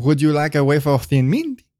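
obnoxiously bad, laid-on-thick French accent. Recalling playing a waiter in an early episode; bad Lumiere French accent. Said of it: "Like a waiter with an obnoxiously bad French accent".

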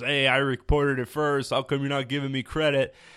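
ordinary talk

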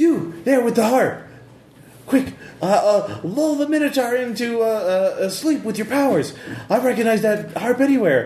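shouted elf woman voice. A game master voices an elven woman calling out to a running player: yelling elven woman's voice. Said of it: "elven woman's voice, yell out at you".

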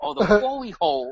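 high put-on Japanese accent, r turned into l. Retelling a joke someone made, in a mock japanese accent. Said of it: "with your Japanese accent".

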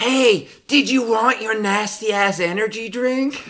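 very high, very loud, drawn-out screaming yell. Telling about a woman yelling at her boyfriend across the street, retelling her scream. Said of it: "She screams".

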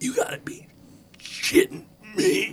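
wet, gurgling, choking whisper. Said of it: "he sort of horfs up a little bit of blood".

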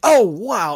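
overexcited, loud, way too excited outburst. Suddenly noticing something mid-sentence: overexcited exclamation. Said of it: "that was a little bit too excited".

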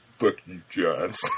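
very deep, low-voiced delivery. Acting out a first-person video game, answer a character as Riddick in a deep Riddick voice. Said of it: "You have to say fuck you in that deep of a voice".

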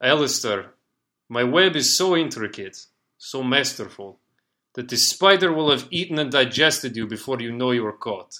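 put-on slight Russian accent. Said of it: "speaking in a light Russian accent".

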